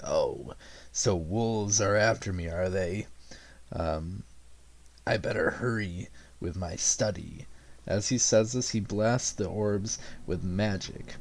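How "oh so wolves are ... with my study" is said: very creepy, spooky, eerie, unnerving voice. Narrating the game, voicing a robed man who notices the party, in a creepy, eerie voice. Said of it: "he speaks up in a very creepy, eerie voice".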